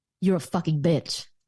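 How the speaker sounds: demeaning tone. Showing how a degrading line sounds after being asked: degrading tone. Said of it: "what does that sound like?".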